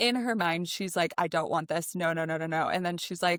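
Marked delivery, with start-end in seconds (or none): 1.2-2.7 acted panicked voice. Speaker retells a book scene, voicing a character's thoughts at her wedding: acting out a panic attack. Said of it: "has a full scale panic attack".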